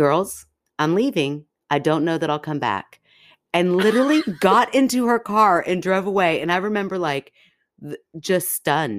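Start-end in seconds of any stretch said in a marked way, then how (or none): 0.0-3.0 chillingly composed, eerily calm, creepy voice. Retelling the moment Mom had enough of the kids fighting, imitating mom's creepy calm voice. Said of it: "in this like very creepy, calm voice said".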